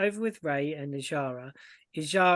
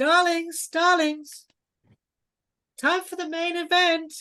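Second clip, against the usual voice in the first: piercing, very high, shrill, loud shout; 14 semitones higher, 7 dB louder than usual. Lady Sletney interrupts the guests' chatting, piercing voice. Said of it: "you hear the piercing voice of Lady Sletney".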